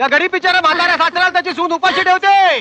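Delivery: put-on theatrical tragic delivery. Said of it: "Natsamrat पुरे".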